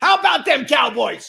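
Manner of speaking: very high, hoarse cheering. Doing an impression of a football coach's catchphrase: Jimmy Johnson impression. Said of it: "I'm working on my impressions".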